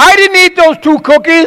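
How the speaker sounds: put-on high voice like a caught kid. Retelling what King Saul says when he sees someone coming, in a little-kid voice. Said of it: "He sounds like a little kid".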